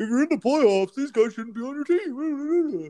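very high, whiny, swooping sing-song. Imitating a co-host dismissing players: whiny impression of Bobby. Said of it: "That was a really good impression of me".

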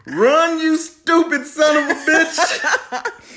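shrill scream, very high, very loud, very slow. Retelling a favorite movie scene, imitating a coach screaming. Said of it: "especially when his coach was screaming".

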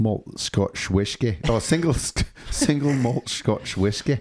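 put-on slow, drawn-out Scottish accent. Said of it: "can you do your Scottish accent".

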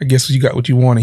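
ordinary delivery

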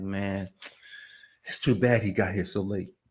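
mock whispering. Retelling the crowd at the grave whispering: imitating people whispering. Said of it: "and they all whispering like".

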